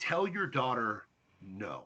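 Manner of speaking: very slow, deliberate, drawn out word by word. Repeating a point to listeners so they process it, really slowly. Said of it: "Let me say that really slowly".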